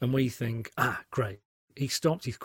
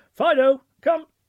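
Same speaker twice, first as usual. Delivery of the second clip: very high, very loud, bright, shrill cheerful calling; 10 dB louder than usual. Demonstrating a call that needs excitement: bright, happy, excited call. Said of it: "your call needs to be nice and bright and happy".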